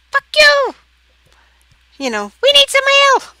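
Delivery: very high, shrill, swooping parrot character voice. Voicing a parrot pecking at a player's head: voicing a parrot. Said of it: "Parrot starts pecking at your head, and he says".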